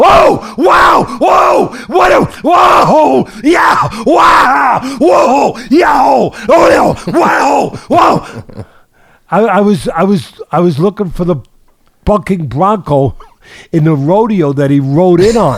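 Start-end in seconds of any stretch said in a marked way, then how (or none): 0.0-8.6 mock frantic, wildly excited announcer call, higher pitched. Mocking a boxing announcer's over-the-top call: imitating a wildly excited announcer. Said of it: "to go on and on and on".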